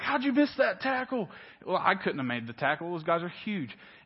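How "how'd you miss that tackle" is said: put-on, pitched-up heckling holler. Retelling watching football from the stands, imitating yelling at a player. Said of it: "Or I yell at the players".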